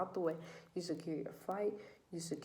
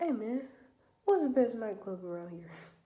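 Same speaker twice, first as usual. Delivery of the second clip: loud, raised, easygoing buddy voice; 4 semitones higher, 5 dB louder than usual. Telling how Lamar asks locals for tips, doing a Lamar impression. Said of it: "That's my Lamar voice".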